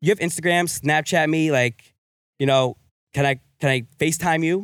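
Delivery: normal talking voice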